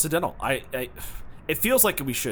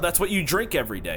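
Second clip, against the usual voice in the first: normal talking voice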